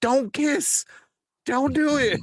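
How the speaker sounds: put-on very high, shrill screaming. Retelling how people in the theater reacted, imitating people screaming. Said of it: "people in my theater screaming".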